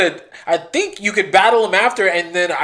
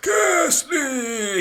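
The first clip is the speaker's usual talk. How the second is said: put-on higher-pitched elderly man voice; 7 semitones higher, 4 dB quieter than usual. Recalling how a Pokemon only said its name: Ghastly as an old man. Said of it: "He sounded like an old man".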